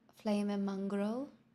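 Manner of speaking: slight touch of a British accent. Showing which accents can be done: British accent. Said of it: "a British accent a little bit".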